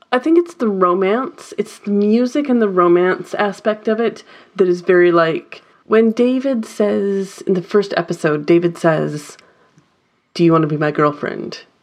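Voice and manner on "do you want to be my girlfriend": put-on flat delivery, faster pace. Telling a co-host about a TV show, quoting a character; imitating David's deadpan. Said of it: "It's very deadpan".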